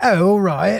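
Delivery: exaggerated British accent. Speaker showing how he doesn't talk, in a mock heavy British accent. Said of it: "You just go full on".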